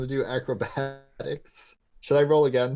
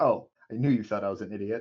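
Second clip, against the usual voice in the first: sassy retort; 3 semitones lower than usual. Voicing a bird character hopping down from a shoulder: sassy in-character retort. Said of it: "I'm just gonna hop back down and be like".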